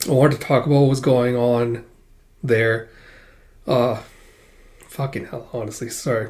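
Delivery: choked-up voice, catching and breaking with emotion. Explaining a break from videos, starting to talk about Palestine: choked up. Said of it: "Getting really choked up talking about it".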